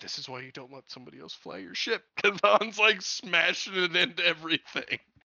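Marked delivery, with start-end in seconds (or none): 0.0-2.0 soft, fast delivery. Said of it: "Lando's line of".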